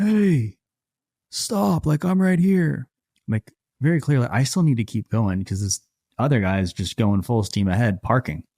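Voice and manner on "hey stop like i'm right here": put-on very high, stretched-out, drawn-out shout. Speaker retells a guy yelling at him as he gets closer, retelling a yell. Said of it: "this dude is just yelling at me".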